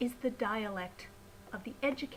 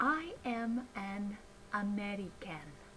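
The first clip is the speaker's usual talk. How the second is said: very slow, every syllable said separately; 3 dB quieter than usual. Talk about English pronunciation, example sentence: every syllable clearly separated. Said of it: "how clearly I spoke every syllable of the word".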